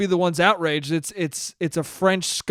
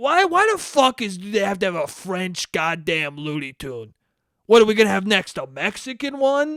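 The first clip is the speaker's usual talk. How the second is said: indignant, upset grumbling and griping. Imitating the same guy complaining to his wife: imitating someone complaining. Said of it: "he definitely has complained to his wife".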